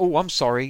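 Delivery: breezy, casual, offhand, brushed-aside tone. Retelling a villain's reaction after cutting off an arm: imitating Ultron brushing off an injury. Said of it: "he acts like it's like a boo-boo".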